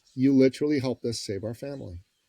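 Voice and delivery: normal talking voice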